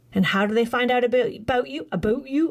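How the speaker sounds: Canadian pronunciation of the vowel in "about". Presenting to an audience, speaking in a canadian accent. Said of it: "I sound so Canadian today".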